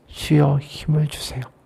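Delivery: low, soft voice, as if to oneself. Retelling an old man's words to himself as he walks, low voice. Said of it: "낮은 목소리로 말씀하셨어요".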